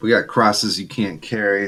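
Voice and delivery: ordinary talk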